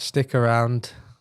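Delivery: mechanical, flat robotic monotone. A show host wrapping up before the next season, in a robotic monotone. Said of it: "Could you sound more robotic?".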